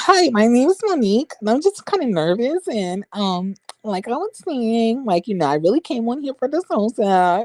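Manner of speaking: high preppy-sounding voice. Retelling how a caller introduced herself: imitating monique's preppy voice. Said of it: "Not you sounding preppy".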